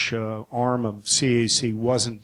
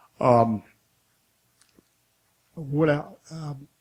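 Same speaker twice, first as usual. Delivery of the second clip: voice failing and giving out, slower; 4 semitones higher than usual. Giving a talk before handing back to the next speaker: voice giving out. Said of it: "just lost my voice".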